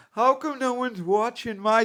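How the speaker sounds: very high, tearful, whining, crying voice. Mocking someone who complains about getting no views: imitating someone crying. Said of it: "she's over here crying".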